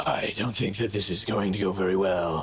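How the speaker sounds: big husky character voice. A player voices Draven drawing his sword, in Draven's big, sexy, husky voice. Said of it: "in his big, sexy, husky voice".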